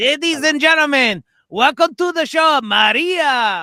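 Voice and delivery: announcer voice in thick put-on Mexican accent. Retelling a show announcer's opening line in a really heavy Mexican accent. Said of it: "a really heavy Mexican accent that I'm doing".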